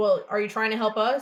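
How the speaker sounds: normal talking voice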